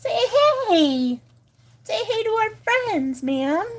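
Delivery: very high, squeaky, squealing voice. Setting up the camera, the speaker coaxes her to greet our friends: squealy, squeaky voice. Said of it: "my squealy, squeaky, annoying voice".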